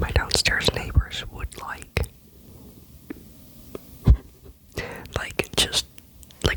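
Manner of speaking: whispering every word.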